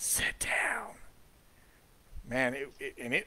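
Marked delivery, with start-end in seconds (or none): 0.0-0.9 high, forceful, creepy whisper. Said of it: "it was kinda forceful".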